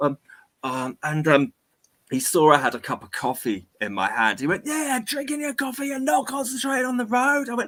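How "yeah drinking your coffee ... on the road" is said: mock, very high, bellowing rant. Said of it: "he just starts bellowing at me".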